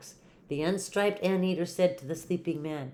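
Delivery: ordinary delivery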